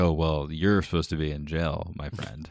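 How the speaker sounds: mocking, dry, sarcastic quip. Acting out a King's Guard knight's line: imitating a sarcastic remark. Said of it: "It's kinda like someone being sarcastic".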